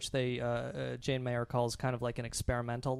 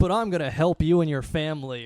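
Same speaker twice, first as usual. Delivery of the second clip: booming, very loud, mocking, sarcastic delivery; 3 semitones higher, 10 dB louder than usual. Retelling what he said, imitating a sarcastic remark.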